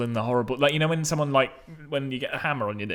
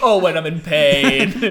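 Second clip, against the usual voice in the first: put-on Yorkshire accent, loud, drawn out very slowly; 3 semitones higher, 7 dB louder than usual. Repeating another speaker's reply to mock it: imitating a yorkshire accent. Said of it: "turned inexplicably Yorkshire".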